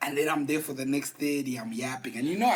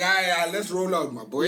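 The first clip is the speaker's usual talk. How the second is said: ordinary talk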